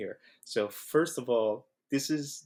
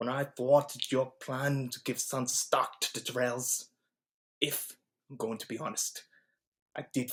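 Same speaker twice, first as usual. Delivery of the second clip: put-on whisper with overpronounced consonants; 2 semitones higher than usual. Speaker demonstrating how to do Baelish's voice, whispered Baelish impression. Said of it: "Just talk in a whisper".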